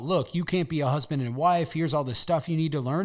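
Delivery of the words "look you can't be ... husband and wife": usual speaking voice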